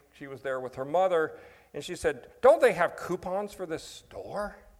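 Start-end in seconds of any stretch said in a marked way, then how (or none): 2.4-4.5 fed-up, exasperated, raised complaining tone. Retelling a woman's question to her mother in a toy store, mock-exasperated.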